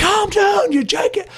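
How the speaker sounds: high-pitched, screeching, yelling movie cop impression. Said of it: "you know how Martin Lawrence will be like".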